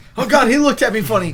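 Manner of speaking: very high, frightened, cowering fearful cry. Acting out someone cowering in fear after a look: mock fearful voice. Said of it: "cowering in fear".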